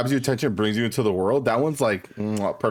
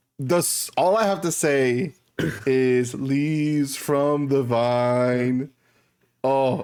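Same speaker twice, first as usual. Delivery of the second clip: tearful, choked-up voice, "vine" drawn out; 3 semitones higher than usual. Recalling a moving moment from a show she watched, voice choking up. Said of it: "I'm already tearing up".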